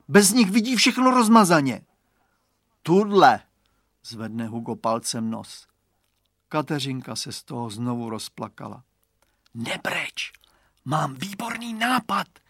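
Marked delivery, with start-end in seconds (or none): 9.5-12.2 hushed, high, soft whisper. A character whispers to a crying girl; whispering. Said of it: "zašeptal jí Radovan".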